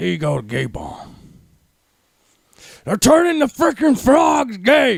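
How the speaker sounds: shrill, swooping, drawn-out bellow, slow and high. Giving a difficult voice a go while someone urges them on, Alex Jones impression. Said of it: "you can do an Alex Jones".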